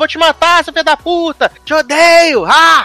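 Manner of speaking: put-on furious yelling. Retelling a tv scene where a character threatens someone: imitating someone yelling.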